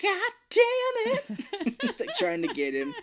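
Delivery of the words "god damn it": frantic, high, slow drawn-out scream. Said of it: "she's screaming".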